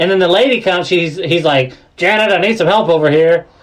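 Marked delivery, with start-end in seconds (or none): 2.0-3.4 put-on rude, snide voice. Retelling a man in line calling a lady over: imitating a rude dickhead voice. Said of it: "he even has, like, a dickhead voice when he says it".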